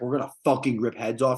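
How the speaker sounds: head coach voice, locker-room pump-up delivery. Contrasting two head coaches, quoting one: Dan Campbell impression. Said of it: "Dan Campbell comes down, he's like".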